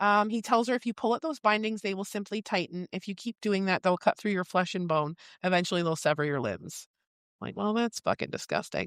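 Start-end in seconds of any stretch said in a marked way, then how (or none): none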